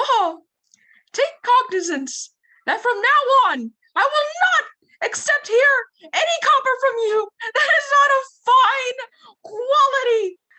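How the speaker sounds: very high, loud cartoonish voice. Asked by a co-performer to do the Mickey for an audience: Mickey voice. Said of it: "do the Mickey".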